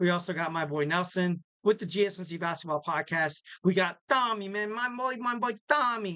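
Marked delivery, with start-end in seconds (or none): 3.6-6.2 put-on Italian accent. Podcast host introducing his co-host Tommy, in a put-on Italian accent. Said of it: "whenever I say Tommy, I have this Italian accent".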